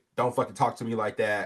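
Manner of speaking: normal talking voice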